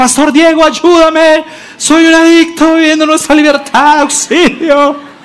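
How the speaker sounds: put-on very high, piercing shout. Retelling how they stood up mid-sermon and cried out, retelling a shout for help. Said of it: "me levanté y grité en plena prédica".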